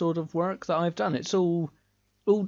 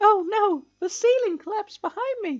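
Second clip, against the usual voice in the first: very high-pitched video game heroine voice; 4 dB louder than usual. Playing a labyrinth game, the speaker acts out the main protagonist, voicing the female protagonist. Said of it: "I'll act out as the main protagonist here".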